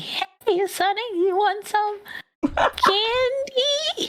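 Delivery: put-on very high little old lady voice, words stretched. Trying out voices for a character, a speaker offers an old lady voice. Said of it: "Maybe an old lady".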